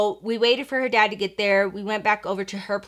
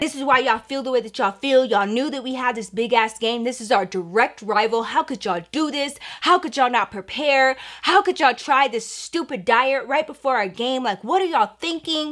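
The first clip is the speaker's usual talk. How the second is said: furious, mad, ranting tirade; 3 semitones higher than usual. Retelling how the coach scolded the players: imitating an angry coach. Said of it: "She was so mad".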